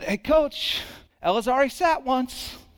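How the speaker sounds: play-acted courteous, gentle, kind, polite voice. Retelling what the speaker said to the coach about ella, in a put-on kind, gentle voice. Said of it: "in the most kind and gentle voice I have".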